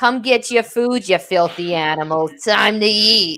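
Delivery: put-on Staten Island accent in an old smoker style. Repeating your pre-recorded feeding message for a pet, use an obnoxious smoker Staten Island voice. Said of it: "in like that really obnoxious smoker Staten Island voice".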